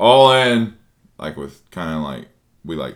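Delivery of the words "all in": put-on very loud, shrill, high-pitched drunken voice. Retelling a poker game, imitating a drunk friend betting. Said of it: "looking at his phone drunk".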